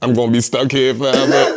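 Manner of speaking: weepy whine through tears. Retelling being lost on a plane while tripping: imitating own past crying. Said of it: "I started crying, like".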